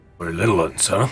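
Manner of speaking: ogre character voice. Voicing an ogre who speaks to the party in common: voicing an ogre. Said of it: "he looks to you, and he says".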